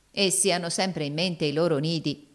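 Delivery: plain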